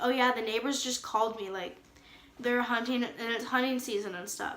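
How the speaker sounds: usual speaking voice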